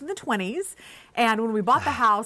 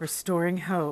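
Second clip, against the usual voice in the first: spooky, eerie, creepy put-on voice; 3 semitones lower, 4 dB quieter than usual. Co-host repeating the podcast title after the host, in a creepy voice. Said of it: "repeat what I say in a creepy voice".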